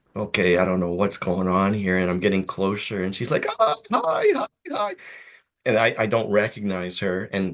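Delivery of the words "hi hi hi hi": put-on heavy Ukrainian accent, very high and slow. Retelling a woman at the meat counter greeting them, in a thick ukrainian accent. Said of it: "thick Ukrainian accent".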